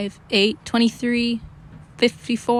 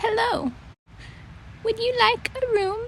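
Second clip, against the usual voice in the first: tiny, small, quavering, wavering, very high voice; 12 semitones higher, 4 dB quieter than usual. Someone opens the door after tiny feet pitter-patter down a tunnel, small, wavering voice. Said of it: "a small, wavering voice asked".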